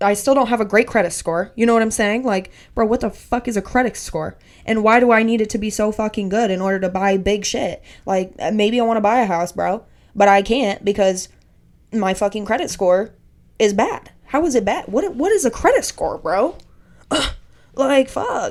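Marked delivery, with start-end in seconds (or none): 2.2-18.5 passionate, fired-up, worked-up rant. Ranting about credit scores, then apologizing: getting really passionate. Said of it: "seriously getting really passionate about this".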